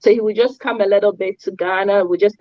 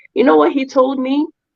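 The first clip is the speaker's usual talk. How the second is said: ordinary talk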